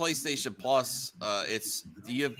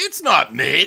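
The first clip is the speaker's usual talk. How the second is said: shouting, higher and louder; 3 semitones higher, 11 dB louder than usual. Disagreeing with another speaker about a game's rating: yelling. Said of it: "why are you yelling at me?".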